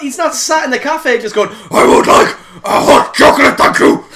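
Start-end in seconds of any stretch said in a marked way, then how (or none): 1.7-4.0 very loud, bellowing, bad superhero voice, hoarse. Describing Bruce sitting in a cafe ordering, in a bad Batman impression with sore throat. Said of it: "my really bad attempt at Batman with a sore throat".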